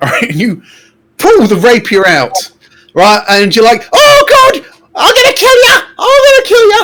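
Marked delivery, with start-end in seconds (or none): 3.9-6.9 excited, thrilled tone. Voicing a player's character pulling out a rapier to attack: excited. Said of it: "And in your excitement".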